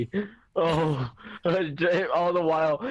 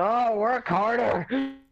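mock yelling, much higher, slower; 5 semitones higher than usual. Acting out a man yelling at his scientists, imitating a yell. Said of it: "he's like fucking yelling".

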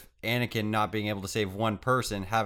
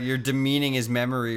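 ordinary talk, nothing marked

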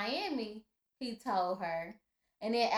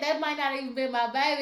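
plain

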